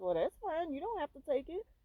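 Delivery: acted-out, very high tone full of attitude. Retelling how a lunch offer was answered after being turned down: imitating someone saying it with attitude. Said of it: "you're saying it with an attitude".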